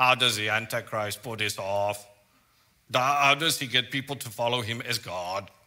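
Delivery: loud, put-on mechanical robotic voice. Imagining listeners asking a question in their heads: robotic Terminator voice. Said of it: "in your robotic Terminator voice".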